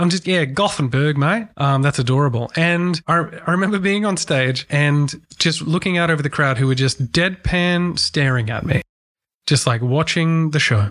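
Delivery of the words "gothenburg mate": Australian accent. Showing how an aussie accent gets away with mispronouncing a city: aussie accent. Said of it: "It's the Aussie accent".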